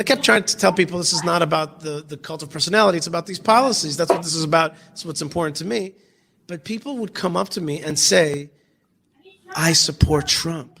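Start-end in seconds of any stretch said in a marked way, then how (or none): 9.5-10.6 conspiratorial, secretive, confiding tone. Retelling what people at a synagogue told the speaker: imitating a hushed voice. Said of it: "in a hushed voice".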